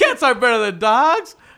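very loud, high maniacal yell. Repeating their own earlier line for the listeners, re-yelling the earlier line. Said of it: "i shouldn't have yelled that".

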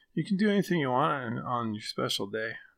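awkward, gawky put-on fifteen-year-old voice. Reading a text as their fifteen-year-old self: awkward teenage voice. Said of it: "I'm going to read this one as 15-year-old [name]".

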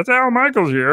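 put-on very high-pitched puppet frog voice. Imitating a sportscaster's Kermit-like voice: Al Michaels impression. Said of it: "he's got that, uh, Kermit voice".

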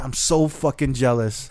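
ordinary talk

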